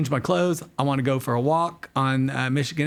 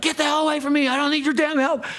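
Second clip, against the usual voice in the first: mock man's yell, much higher and faster; 13 semitones higher than usual. Retelling how the man he offered help yelled at him, imitating someone yelling. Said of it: "Just yell at me".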